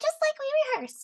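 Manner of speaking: piping, very high, punchy, crisply enunciated character voice. Voice acting a female character's line, very high-pitched voice. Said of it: "Very high pitched".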